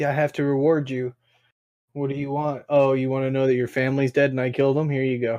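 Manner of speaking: put-on dismissive voice. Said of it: "but she was like".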